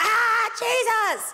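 put-on possessed scream. Imagining a possessed person standing up in church: screaming as a possessed person. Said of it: "starts screaming".

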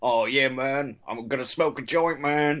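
slow comedian voice, every word drawn out. Retelling how someone does his Tommy Chong impression: Tommy Chong impression. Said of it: "he does that Tommy Chong impression".

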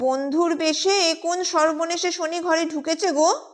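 piercing shriek. Surabala cries out about the lodger who came as a friend; shrill screech. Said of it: "Surbala তীক্ষ্ণ কণ্ঠে চেঁচায়".

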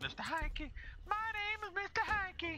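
put-on southern cartoon character voice. Joking after a teammate turns into Mr. Hankey: Mr. Hankey voice, southern accent. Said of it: "He doesn't have that deep of a southern accent".

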